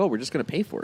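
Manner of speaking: normal talking voice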